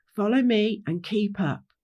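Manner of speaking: ordinary delivery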